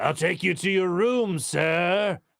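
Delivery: slow, creepy horror-servant voice, sir stretched out. Describing a haunting kid as the horror-movie guy: imitating creepy horror-movie servant. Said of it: "he's the guy that, like, comes out and goes".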